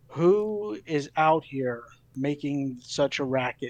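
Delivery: magically enhanced, spell-boosted voice calling out. Player uses magic in a game to make their voice boom, booming voice. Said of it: "I'm gonna make my voice boom".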